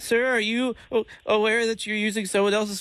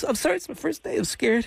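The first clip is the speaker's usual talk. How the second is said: put-on crying, mock sobbing. Calling someone about an unpaid phone balance, saying it's the first day: fake crying. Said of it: "You crying?".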